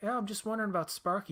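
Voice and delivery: put-on high, quick, brisk kid-sounding voice. Retelling a movie scene's phone call to the foster parents, imitating the kid's voice. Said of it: "he's in the kid's voice".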